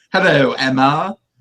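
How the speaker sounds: put-on slight, light British accent. Recapping a scene where a character answers a call: imitating Dylan's British accent. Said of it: "he kind of has a British accent when he says that".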